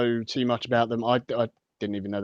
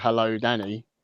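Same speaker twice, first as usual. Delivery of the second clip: normal talking voice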